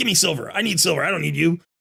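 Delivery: put-on irritated, dismissive tone in rough angry voice. Describing a gear cleanse, acting out talking to the gear, mock-angry at the gear. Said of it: "That's my attitude when I'm doing".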